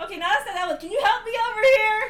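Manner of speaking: calling out high and loud.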